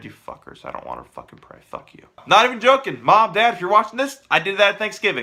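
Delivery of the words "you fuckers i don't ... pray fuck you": hushed, breathy, whispered mutter under the breath. Retelling a Thanksgiving prayer with family: imitating muttering under breath. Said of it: "under my breath".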